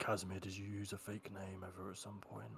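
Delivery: very quiet, half-whispered aside. Asking another player whether they ever used a fake name: half-whispering. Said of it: "I'm gonna whisper".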